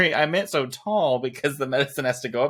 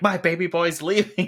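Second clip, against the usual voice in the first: mock yelling; 5 semitones higher than usual. Recounting a TV episode, speaker acts out a character yelling at Red: retelling a yell. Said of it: "she's yelling at Red".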